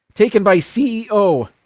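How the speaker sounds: high-pitched voice cracking partway through. Reading a script aloud, voice cracking. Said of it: "Did you hear my voice crack?".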